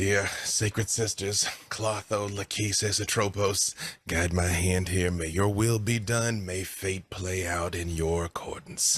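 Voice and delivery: low, muttered speech under the breath. Running toward the Banshee to jam a canister into it, praying under breath. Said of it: "praying slightly, kind of under my breath".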